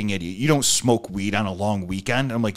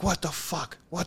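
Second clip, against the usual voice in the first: put-on thick, heavy Puerto Rican accent, pitched up; 7 semitones higher than usual. Quoting a man ordering him to get down, in a heavy Puerto Rican accent. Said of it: "heavy heavy puerto rican accent though".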